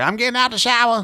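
high mock woman's voice.

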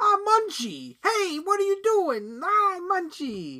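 very high, sing-song cartoon voice with swooping pitch. Retelling how the actor voices the creature: Dom DeLuise voicing Munchie. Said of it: "Dom DeLuise being like".

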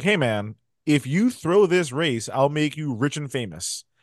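plain

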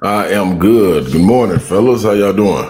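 very loud, big-voiced, booming delivery. Weekly guest greeting the hosts in the morning, in a deep voice. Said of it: "You got the deep voice".

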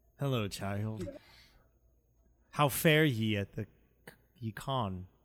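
lowest possible voice. [name] answers a young girl in cosplay at a con: [name]'s voice dropped very low. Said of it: "drops his voice down as low as humanly possible".

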